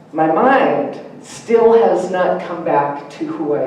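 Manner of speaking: ordinary delivery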